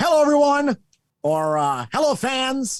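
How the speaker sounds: put-on very high-pitched old-school announcer call. Recalling how announcers opened shows years ago, imitating an old-time announcer. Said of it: "back in the day, it was always".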